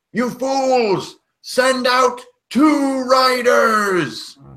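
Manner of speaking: very high, slow goblin bellow, muffled as through tube. Game narrator voices a goblin shouting from the back of the wagon ranks, goblin yelling through a tube. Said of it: "a much louder goblin voice ... yelling through like a, a cardboard tube".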